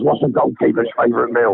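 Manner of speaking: gravelly, dry voice. Telling a joke to the others as a Dyche impression: Sean Dyche impression. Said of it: "let me do you a, a Dyche impression".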